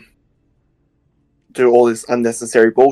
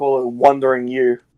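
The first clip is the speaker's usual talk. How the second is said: normal talking voice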